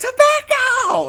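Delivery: put-on very high, sudden yelled blurt like a kid. Retelling a kid shouting in the middle of class: imitating a kid yelling. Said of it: "the kid yells out in the middle of class".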